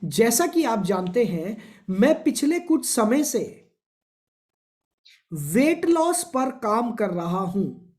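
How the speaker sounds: slow dictation with wide pitch range.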